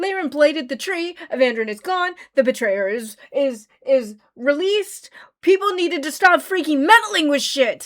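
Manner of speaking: seething, furious venting, tripping over words. Speaker ranting about what just happened, furious. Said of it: "I'm fucking furious".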